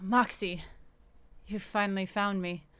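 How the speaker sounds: low, calm, soothing voice. Narrating a story, a voice behind the listener speaks: low calming voice. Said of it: "low, sort of um, calming voice says to you".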